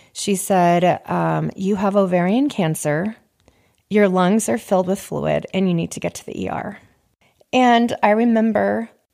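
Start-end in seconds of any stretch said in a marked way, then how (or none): none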